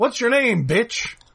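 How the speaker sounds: menacing, flirtatious, evil-sounding villain voice. Describing a film villain's line, in a menacing, flirty Willem Dafoe impression. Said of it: "he's just menacingly evilly, and like he's almost flirting".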